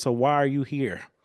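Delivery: play-acted contemptuous, belittling, demeaning and derogatory tone. Retelling what an interviewer asked: imitating a derogatory tone. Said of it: "In the most derogatory way possible".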